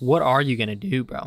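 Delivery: voice cracking mid-line. Bantering with the other speaker, voice cracking. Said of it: "Voice crack".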